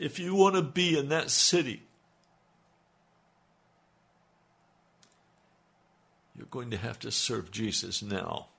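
tearful, crying through the words. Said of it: "I can't even talk about it without crying".

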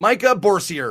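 very American pronunciation. Saying a name after joking about saying it very American: very American pronunciation. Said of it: "very American then".

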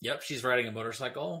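ordinary delivery

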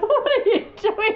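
screaming and shrieking through laughter.

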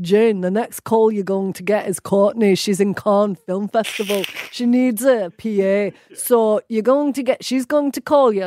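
put-on heavy Scottish accent, laid on thick. Retelling a phone call offering a PA job, in Alan's thick Scottish accent. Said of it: "in his thick Scottish accent".

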